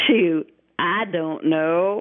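put-on very slow, long drawling Oklahoma accent. Retelling how a kid answered his question, imitating an Oklahoma accent. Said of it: "he's total Oklahoma accent".

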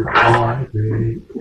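deep, low put-on voice. Friends comparing a voice, repeating the greeting in a deep voice. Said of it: "It definitely has that deep voice".

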